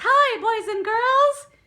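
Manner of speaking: very high, loud squeaky voice. Explaining the head voice register, speaker demonstrates it: Mickey Mouse voice. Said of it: "what I like to call the Mickey Mouse voice".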